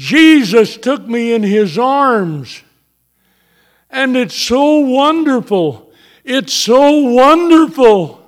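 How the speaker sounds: blissful, rapturous exclamation. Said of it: "she exclaimed".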